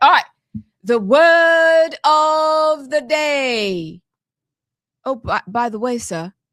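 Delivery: stretched-out British accent. Asked by the others, presenting the word of the day: british accent. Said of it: "Do you want me to do it in a British accent".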